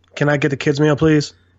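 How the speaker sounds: put-on quiet voice. Acting out ordering a kids meal at a counter: quiet voice as Earn. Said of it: "he's so quiet too".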